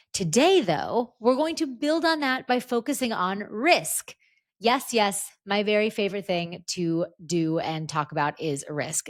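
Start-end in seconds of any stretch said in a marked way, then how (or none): none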